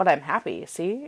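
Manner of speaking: normal talking voice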